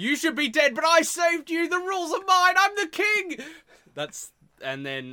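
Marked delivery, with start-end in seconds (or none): 0.0-3.4 very high, loud, triumphant screaming. Acting out the Doctor screaming at JFK: the Doctor screaming. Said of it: "the Doctor comes screaming at".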